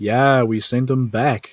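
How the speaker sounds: distant yelling, calling out from afar. One of the people on watch answers from camp, yelling out. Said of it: "yell out".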